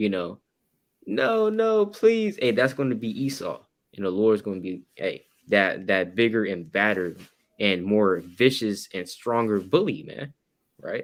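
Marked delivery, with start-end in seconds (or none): 0.0-2.4 put-on very high, swooping baby-like crying wail. Describing a bully meeting someone stronger, imitating him wailing like a baby. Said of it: "start wailing like a baby".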